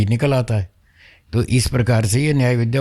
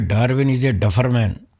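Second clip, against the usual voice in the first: ordinary talk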